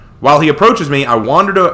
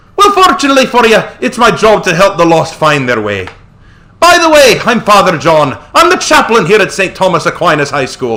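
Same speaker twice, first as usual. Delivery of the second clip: put-on Irish accent, higher; 5 semitones higher, 4 dB louder than usual. Voicing a priest character greeting a new student: put-on Irish accent. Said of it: "we gotta give him the Irish accent".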